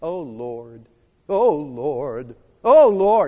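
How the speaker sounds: drawn-out, very slow, low pious churchy voice. Explaining taking God's name in vain, the speaker demonstrates it in a holy voice. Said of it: "our holy voice".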